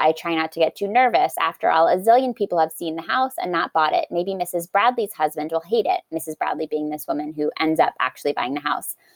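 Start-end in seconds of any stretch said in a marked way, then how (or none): none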